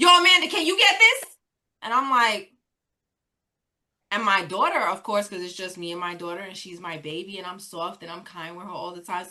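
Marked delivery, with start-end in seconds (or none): 0.0-1.4 imitated yell, mock yelling. Describing how her mother asks her for help at home, retelling her mother's yell. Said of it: "Grandma, why are you yelling?".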